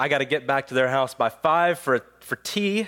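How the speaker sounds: ordinary talk, nothing marked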